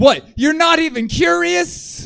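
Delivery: desperate pleading tone, very high and very loud. Retelling how a man kept pressing him while he stayed silent: mimicking a desperate man. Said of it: "He's desperate now".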